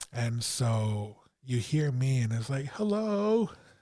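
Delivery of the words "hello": fearful, very high calling out. Retelling calling out after a scraping sound in the house: imitating own frightened voice. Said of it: "you could hear the fear in my voice".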